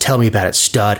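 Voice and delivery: put-on mimicked whisper. Retelling how she straddled the coach and spoke, imitating her whisper. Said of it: "straddles the coach and just whispers".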